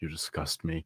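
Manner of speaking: barely audible, very quiet whisper. A player's character looks a man up and down, whispering. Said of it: "I just whisper".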